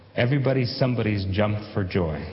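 plain

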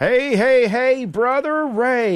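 excited, high, loud, whooping radio-style delivery.

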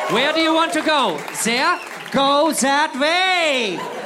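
high, loud, slow, domineering, commanding shout.

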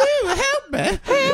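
very high, laughing, scared lady voice. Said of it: "Is that your lady voice?".

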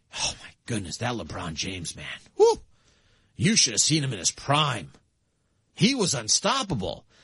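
very low, swooping, animated dad voice. Picturing a dad telling his young kids at their first NBA game, imitating a dad talking to kids. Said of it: "daddy's telling them".

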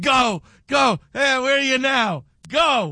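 slow, mild, half-hearted drawn-out yell. Imitating how a colleague named Al used to yell at him: imitating Al yelling. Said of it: "He used to yell at me all the time".

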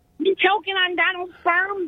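silly, soft, cartoonish character voice. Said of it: "you sound like a cartoon character".

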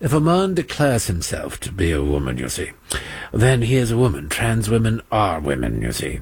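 low, snooty, put-on posh British accent. Mocking what a man said in the past, british accent. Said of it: "no, that's not a British accent".

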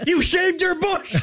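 overjoyed, ecstatic, way-up-high delighted voice. Playing an emotion game, giving the chosen phrase one emotion: ecstatic.

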